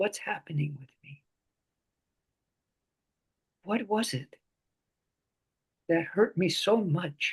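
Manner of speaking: the gentlest, softest possible voice. Guiding listeners to ask themselves questions, most gentle voice. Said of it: "with the most gentle voice you can".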